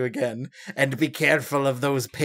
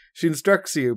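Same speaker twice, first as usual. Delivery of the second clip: plain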